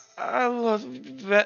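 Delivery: slow, loopy, woozy, dazed voice. Voicing Kilroy waking up and saying he loves Vex: loopy Kilroy voice. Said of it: "all loopy".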